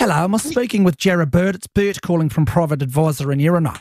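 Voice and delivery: put-on New Zealand accent. Trying out a put-on caller voice after being asked: Kiwi accent. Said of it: "Why don't you try a Kiwi one?".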